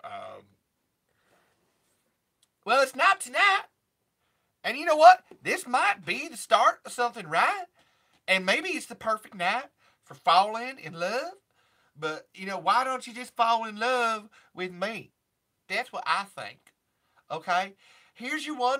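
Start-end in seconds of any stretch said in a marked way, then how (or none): 2.6-16.6 put-on Southern country drawl, higher and louder. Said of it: "trying to think of [name]-y things".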